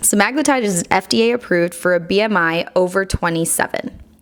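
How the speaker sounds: usual speaking voice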